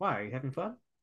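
dry, wry, needling, sarcastic tone. Quoting a reply to an upset father: sarcastic Willy Wonka impression. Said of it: "my sarcasm comes from the Gene Wilder character".

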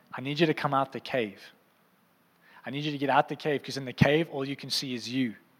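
usual speaking voice

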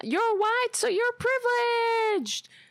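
piercing, very high, shrill scream. Retelling what a woman at the hospital started screaming, imitating her screaming. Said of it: "she starts screaming".

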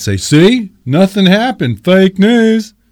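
put-on Southern accent. Voicing part of the country reacting to the story, in a put-on Southern accent. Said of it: "Sorry, I did the accent again".

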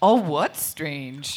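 low, slow, dopey oblivious drawl.

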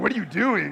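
put-on scornful, disdainful tone. Retelling the wife's question about quoting Frozen: imitating disdain in wife's voice. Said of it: "taste and hear and feel the disdain in her voice".

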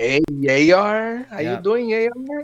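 put-on Mexican accent. Podcast host greets their new sponsor, in a put-on mexican accent. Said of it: "the Mexican accent".

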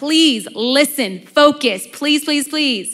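insistent, heartfelt, repeated pleading. Reading a scripture passage as a last plea: pleading as Jesus. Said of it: "Jesus's last plea".

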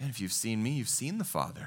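weary, fed-up, worn-out, exasperated tone. Retelling Jesus answering Philip's question: imitating an exasperated Jesus. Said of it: "hear the tone in his voice".

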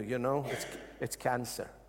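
low, sinister, devil-like whisper. Preaching about illness fears, voicing the devil: imitating a devil's whisper. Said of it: "he whispers to you".

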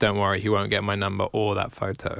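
normal talking voice

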